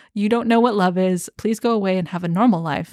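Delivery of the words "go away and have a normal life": ordinary talk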